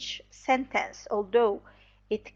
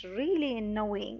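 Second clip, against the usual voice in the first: stressing "really annoying", low and quieter; 6 dB quieter than usual. Demonstrating stress and voice height in example sentences: stress on 'really annoying', low. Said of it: "Really annoying are stressed, but the voice is low".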